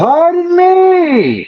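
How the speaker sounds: very high, shrill full-volume yell, "me" held long. Player's character calls across a chasm to distant figures, shouting as loud as possible. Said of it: "I say with as loud a voice as I can muster".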